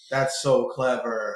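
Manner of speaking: low, flat, deadpan sarcastic monotone. Responding to a Honey Badger suggestion in a flat sarcastic monotone. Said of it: "I went monotone to be sarcastic".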